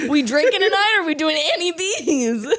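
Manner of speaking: attempted Lebanese accent, put on, nearly convincing. Show another speaker how people in Lebanon sound, in a put-on Lebanon accent. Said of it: "that's Lebanon accent".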